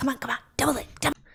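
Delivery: hushed, pressing, urgent whisper. Recalling the officer in the back and TikTok live battles, retelling a whispered urging. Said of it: "she's whispering".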